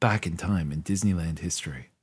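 quiet public-radio style voice. Podcast co-hosts try out a voice for their vault segment: NPR voice. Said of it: "Our NPR vault voice".

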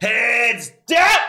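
very high, loud shouting. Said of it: "and he'd yell".

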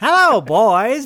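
shrill, booming character voice, pitched way up and belted. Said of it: "Why do I sound like Rip Taylor?".

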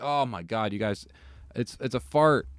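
ordinary talk, nothing marked

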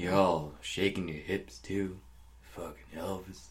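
put-on slow, low, grumbling old man voice. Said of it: "that's my old man voice".

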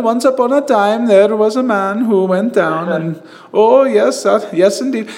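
toned-down Indian accent, lightly done. Showing another speaker how to lighten the accent, in a lighter indian accent. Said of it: "Lighten it up a little bit".

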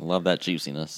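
deadpan, poker-faced, completely serious delivery. Replying to talk of a juicy steak: said with a straight face. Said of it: "The way in which you said that with a straight face".

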